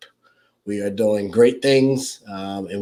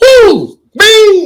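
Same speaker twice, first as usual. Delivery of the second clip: high, loud mock cheer with ding sound effect. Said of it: "I wish I could hit a button".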